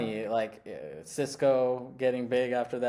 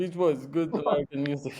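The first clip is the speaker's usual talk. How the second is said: mock old-school immigrant dad voice; 2 semitones higher than usual. Imitating how an old-school immigrant dad would react: immigrant old-school dad. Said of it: "sort of immigrant, like, old school dad would react".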